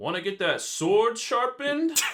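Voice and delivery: shrill, booming video game NPC voice. Asked by friends to do his character's NPC voice line: NPC voice line. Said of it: "like your NPC voice line when somebody walks by".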